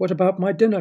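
high-pitched crying out in dismay. A daughter sent to her room protests to her parents, crying out. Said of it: "cried Rebecca".

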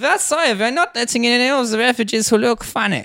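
very high fake German accent, slipping into Russian. In a group conversation, the speaker tries out a line in a bad German accent. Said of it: "that was straight German".

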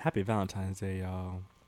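deep, low, sensual and sultry voice. Radio co-host greets listeners at the show's opening; deep sensual voice. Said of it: "my [name] deep sensual voice".

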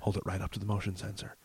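mock quiet, hushed voice. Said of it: "really quietly is like".

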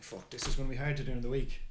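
ordinary talk

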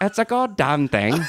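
fake British accent on "goddamn", pitched high. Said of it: "say "goddamn" with a British accent".

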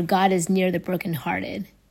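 normal talking voice

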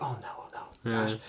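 mock hushed, anxious, panicky whisper. Recalling when someone arrived, speaker acts out their inner reaction, retelling nervous panic. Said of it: "you get that nervous, like, anxiety".

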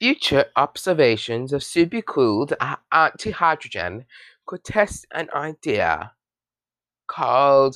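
botched, bad British accent attempt. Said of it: "I can't do a British accent".

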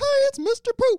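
squeaky voice, high and slow. Retelling Brian's sketch character's greeting: Mickey Mouse voice. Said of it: "Mickey Mouse voice".

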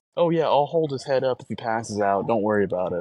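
normal talking voice

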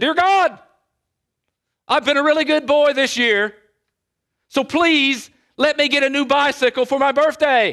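put-on boy shouting at top of lungs, loud and high. Telling a joke about a boy praying at bedtime: imitating a boy shouting. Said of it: "he began to shout at the top of his lungs".

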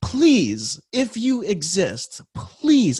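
put-on desperate plea, drawn-out, high and swooping. Retelling a prayer said alone out loud: imitating a desperate plea. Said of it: "in that moment of desperation".

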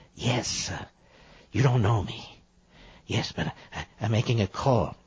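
soft, seedy, sleazy, creepy voice. Mocking the president's voice, speaker plays a sleazy phone caller. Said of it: "these sleazy types are calling you on the phone".

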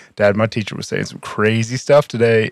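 ordinary talk, nothing marked

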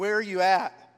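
angry yelling. Retelling yelling at God alone in the car: retelling angry yelling at God. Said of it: "Just angry".

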